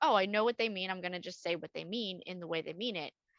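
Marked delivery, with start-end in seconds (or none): none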